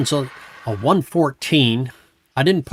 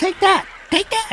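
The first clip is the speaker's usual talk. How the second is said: very high, squeaky little critter voice. Speaker retelling what the otter said on hitting the raptors, high squeaky voice. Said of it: "in his real high, squeaky voice".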